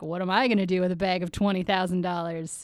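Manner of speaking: ordinary delivery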